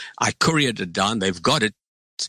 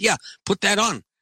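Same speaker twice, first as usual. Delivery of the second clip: high, loud yell called out at distance; 11 semitones higher than usual. Telling a story, the speaker re-enacts yelling back to the projectionist: retelling yelling back. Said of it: "I yelled back".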